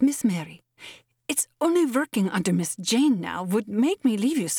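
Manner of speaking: halting, tense, jerky outburst of words. Anna answers miss mary's plea not to leave her, in a tense, jerky burst. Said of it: "it came in one tense, jerky burst".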